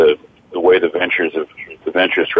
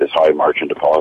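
plain

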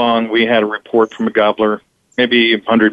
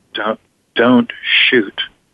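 whispered speech. Retelling a hunt where a companion leaned over: imitating a whisper. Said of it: "He whispers".

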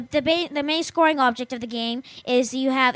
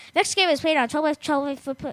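reading at top speed, rushed and rattled off. Reading an explanation of the game aloud: reading as fast as possible. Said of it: "I'm gonna read this as fast as I can".

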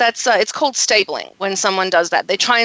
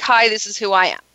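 plain

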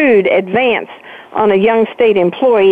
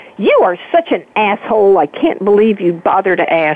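acted angry voice. Retelling the comeback to Billy's condescending question: retelling an angry retort. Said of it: "And it just made me so mad".

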